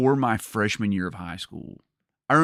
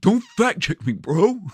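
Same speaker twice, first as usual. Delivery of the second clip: put-on sarcastic nerdy voice, higher and louder; 12 semitones higher, 5 dB louder than usual. Repeating own earlier line as described: sarcastic Napoleon Dynamite voice. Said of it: "In a st-, sarcastic tone".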